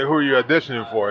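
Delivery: normal talking voice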